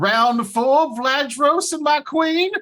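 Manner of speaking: playful, prancing put-on character voice. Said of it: "he prances back into the, uh, to the tent, and he's like".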